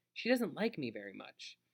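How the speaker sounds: ordinary delivery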